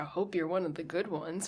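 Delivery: normal talking voice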